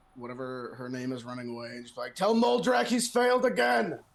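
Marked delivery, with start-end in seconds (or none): 2.2-4.0 high, drawn-out, yelling shout. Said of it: "Can I yell at that".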